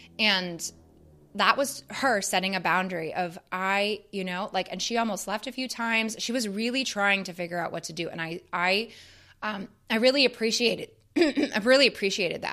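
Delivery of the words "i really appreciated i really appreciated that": emotional, getting all choked up. Talking about a film scene that moved them: choked up. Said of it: "really, really choked up".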